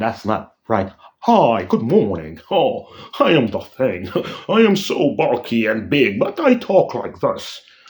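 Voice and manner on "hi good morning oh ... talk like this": animated, put-on near-English accent with swooping pitch. Speaker complaining about how a version of Ben Grimm talks: Ben Grimm with English accent. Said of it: "why does he have almost an English accent?".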